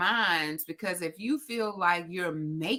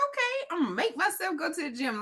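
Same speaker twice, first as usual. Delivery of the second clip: eager, excited, very high, swooping sing-song; 11 semitones higher than usual. Retelling repeating back a phrase someone dictated, imitating own excitement. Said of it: "Like I'm all excited to say".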